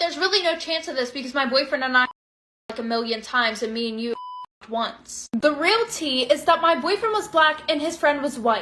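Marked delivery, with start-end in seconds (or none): none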